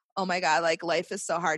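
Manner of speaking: ordinary talk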